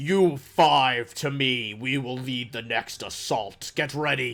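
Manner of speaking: voice of a huge stone giant. Narrating the game, voicing a stone giant readying the next assault, booming stone giant voice. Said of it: "another booming stone giant voice".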